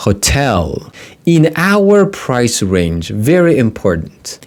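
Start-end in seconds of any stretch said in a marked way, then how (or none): 0.0-0.9 hotel with stress on second syllable -tel. Teaching travel vocabulary, pointing out word stress: stress on 'tel' in hotel. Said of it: "The second syllable takes the stress".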